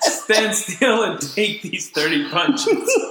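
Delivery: laughing mock speech, slow and high-pitched.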